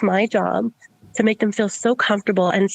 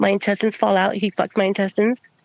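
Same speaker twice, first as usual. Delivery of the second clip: ordinary talk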